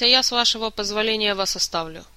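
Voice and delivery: ordinary delivery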